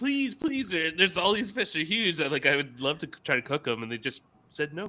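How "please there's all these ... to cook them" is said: mock pleading, higher, slower. Retelling asking companions on a fishing trip to keep the fish, acting out begging. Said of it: "I was just almost begging".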